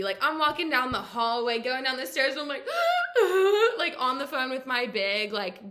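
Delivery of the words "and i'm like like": high, loud mock gasping sob. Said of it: "bawling my eyes out".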